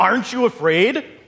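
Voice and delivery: very high, snarling voice. Reading a fable, the wolf challenges the sheep: snarled. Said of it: "snarled the wolf".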